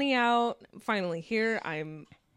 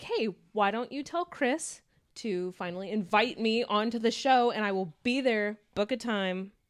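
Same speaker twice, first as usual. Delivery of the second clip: usual speaking voice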